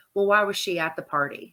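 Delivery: put-on calm, matter-of-fact voice. Quoting Peter's line from the dinner scene: imitating Peter's matter-of-fact calm voice. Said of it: "matter of fact, calm, it's like talking about the weather kind of voice".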